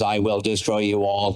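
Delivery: dead flat robotic monotone, no inflection. The voice actor demonstrates his robot role from the Sonic games in E-123 Omega monotone voice. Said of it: "it's all done like this".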